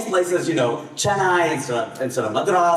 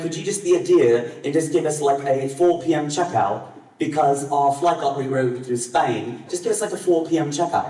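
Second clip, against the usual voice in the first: put-on British accent laid on thick. Retelling a friend calling a hotel front desk, in a full British accent. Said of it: "he goes full British on them".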